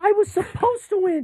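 very high, mock whining voice.

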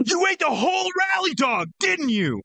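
shrill, angry, very high voice. Taking a turn in a game of saying one line in different emotions, angry. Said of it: "I'll start us off here with angry".

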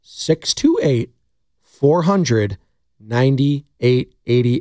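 very slow, deliberate, each item spaced out. Repeating a call-in phone number for listeners: saying the number slowly. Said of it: "I'll say it slow".

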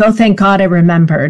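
ordinary talk

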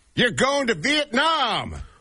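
very excited, thrilled, high swooping voice. Retelling a game show announcing a prize trip: mock-excited Ryan Seacrest. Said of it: "says very excitedly".

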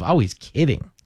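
ordinary delivery

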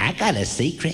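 put-on talking like a small child. Answering a phone call, the speaker puts on a little kid voice. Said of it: "I was in the mood to talk like a little kid".

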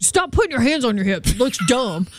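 put-on dude-style guy voice. Retelling a friend's advice to another guy about photo poses, in a dude guy voice. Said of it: "is my guy voice".

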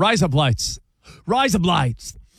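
slow Australian accent, "lights" sounding like "blades". Showing how the phrase sounds like razor blades: Australian accent. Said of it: "in an Australian accent".

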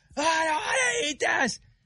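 put-on piercing kid's shriek, very high and shrill. Retelling what a small boy at the next table yelled: imitating a kid screaming. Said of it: "that kid went top of its lungs".

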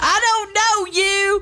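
put-on squeaky cartoon child voice. Reminded of Bobby Hill, the speaker quotes another of his lines: Bobby Hill impression. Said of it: "that was pretty good".

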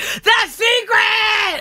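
very high, drawn-out yell, "secret" stretched out. Telling your favorite thing about the movie, act out its repeated line, imitating Oprah Winfrey yelling. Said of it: "she keeps yelling".

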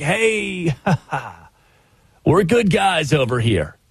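mock lofty, poetic, grandiose manner. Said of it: "give an hour-long wax poetic".

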